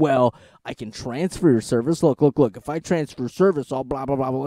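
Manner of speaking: put-on snarky young voice. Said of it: "twenty-something, snarky dude".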